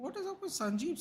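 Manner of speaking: high, wide-ranging, incredulous tone of disbelief.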